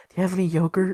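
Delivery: hushed serious character voice. Voicing Cletus as he asks the others if they have any: Cletus, quiet and serious. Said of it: "he like gets real like quiet and serious".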